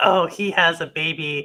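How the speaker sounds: ordinary talk, nothing marked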